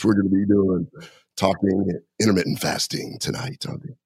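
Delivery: seductive, husky, raspy voice. A podcast guest with a raspy voice today opens the episode in a sexy voice. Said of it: "This is my sexy Dr. Brown voice".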